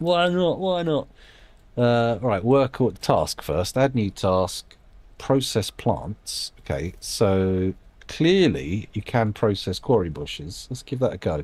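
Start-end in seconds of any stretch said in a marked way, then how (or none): 0.0-1.1 high, breezy, carefree put-on voice.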